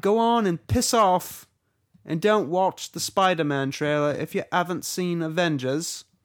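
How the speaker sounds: attempted British accent, high and loud. Trying again for a listener's approval, the speaker does an attempted British accent. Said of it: "Any better?".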